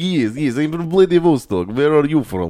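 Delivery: put-on Russian accent. Retelling how he answered people amazed he was from Russia, fake Russian accent. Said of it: "talk in the Russian accent".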